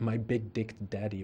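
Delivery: ordinary delivery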